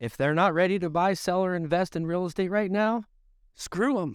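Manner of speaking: high, mock-breezy, dismissive sarcastic brush-off.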